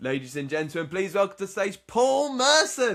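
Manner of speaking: mock crowd-rousing announcer call with rising pitch. Retelling getting the crowd up before introducing a guest on stage: retelling a hyped stage introduction. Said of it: "getting the crowd up for it, hyped".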